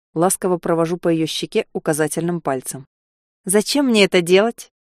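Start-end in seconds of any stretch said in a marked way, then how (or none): 3.5-4.7 challenging, defiant tone. A girl whose cheek the narrator strokes asks him back, challenging. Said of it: "С вызовом интересуется она".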